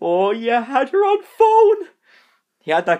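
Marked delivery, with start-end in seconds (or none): 0.0-1.9 very high, very slow, drawn-out, rising voice. Retelling what the speaker's dad said back to him, in dad's high-pitched voice. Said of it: "He went into a high pitched voice".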